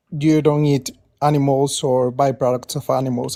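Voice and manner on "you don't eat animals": plain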